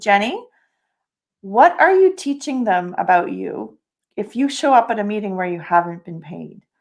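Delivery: ordinary delivery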